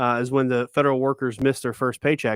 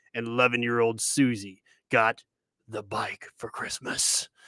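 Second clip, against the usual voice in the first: tense, hushed, dire, ominous movie-trailer narration; 3 semitones lower, 5 dB quieter than usual. Showing how that guy's way of talking makes anything sound dire: tense, dire put-on voice. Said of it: "you can make anything sound, like, tense or or dire".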